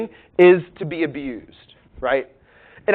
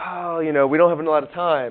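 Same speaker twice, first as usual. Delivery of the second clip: put-on sarcastic delivery. Retelling a remark made in another class: imitating a sarcastic remark. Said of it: "said something sarcastically in another class and was like".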